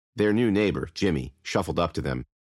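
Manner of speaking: plain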